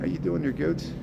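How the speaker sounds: plain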